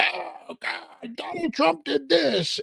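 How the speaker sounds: very high, rough-edged, creaky, drawn-out outrage. Doing an impression of the next four years, imitating outraged Democrats. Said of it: "Here's my impression of the next four years".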